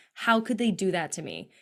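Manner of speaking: plain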